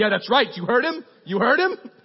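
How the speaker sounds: high, loud, rasping mom voice. Imitating a parent agreeing loudly: Janine voice. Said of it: "that's my Janine voice".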